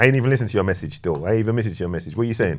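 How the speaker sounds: fast, loud shouting.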